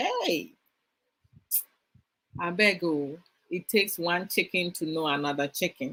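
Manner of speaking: sarcastic, knowing, tit-for-tat tone. Showing a sarcastic comeback to someone calling them a chicken: sarcastic. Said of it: "if I want to be sarcastic".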